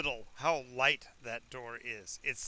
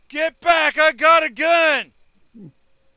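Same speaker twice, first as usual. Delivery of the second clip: booming, very high, very slow, drawn-out yell; 13 semitones higher, 20 dB louder than usual. Voicing an unseen voice from inside the house: yelling. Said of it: "you hear a voice yell".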